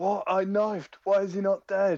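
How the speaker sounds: high-pitched, squeaky mock yell of a kid. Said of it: "a guy yelling".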